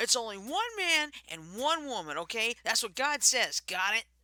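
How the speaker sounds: opinionated, insistent, hardline, know-it-all lecturing tone. Acting out what he'd be saying, in an impression of a hardline view. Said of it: "good impression".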